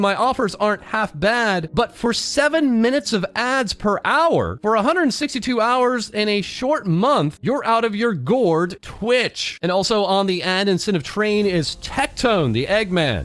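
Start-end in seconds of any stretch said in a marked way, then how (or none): none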